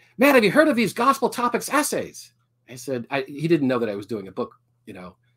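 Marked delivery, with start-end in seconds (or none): 0.2-2.4 put-on very heavy Peruvian-accented English, pitched up. Retelling a phone call from his former brother-in-law from Peru, in a thick Peruvian accent. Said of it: "in his very thick Peruvian accent".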